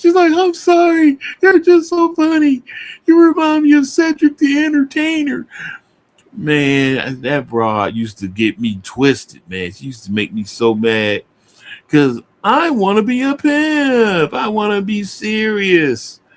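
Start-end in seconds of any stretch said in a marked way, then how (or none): 0.3-5.5 put-on laughing while talking, higher pitch. Retelling a woman's reply to him: imitating someone laughing while talking. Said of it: "She steady laughing".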